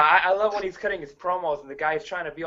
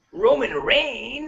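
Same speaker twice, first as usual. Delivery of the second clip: the name punched out with heavy emphasis; 9 semitones higher than usual. Repeating how someone said the name: extra emphasis on 'Roman Reigns'. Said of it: "he said it with, with an extra emphasis. He said Roman Reigns. He said it like that".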